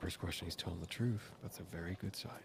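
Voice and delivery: confiding, hushed whispered aside. Leaning over to McCleary during an interrogation to share a verdict: whispering. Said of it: "I lean over to McCleary and I whisper".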